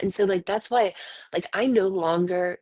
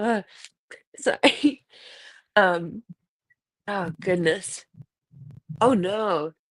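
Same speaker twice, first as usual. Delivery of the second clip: talking through laughter. After describing a shirt design, the speaker keeps going, laughing while talking. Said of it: "I can't stop laughing about that".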